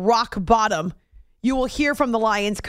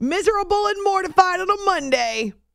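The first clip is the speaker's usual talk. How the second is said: delighted, relishing, gleeful, pitched-up delivery; 8 semitones higher than usual. Announcing a write-in poll category on a football show, gleeful. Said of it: "Why do I sound so gleeful about it?".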